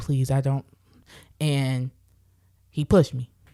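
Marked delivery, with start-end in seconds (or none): 0.0-0.6 put-on begging tone. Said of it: "I'm begging him".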